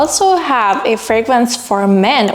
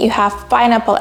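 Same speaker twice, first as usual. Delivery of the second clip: ordinary talk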